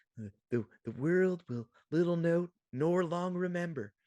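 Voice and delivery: reedy voice in a stage-actor style. Imitating the actor who played Lincoln in Manhunt, in a reedy Lincoln voice. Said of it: "the reedy voice that you get from".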